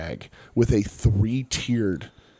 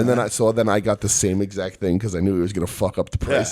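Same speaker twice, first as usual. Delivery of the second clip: normal talking voice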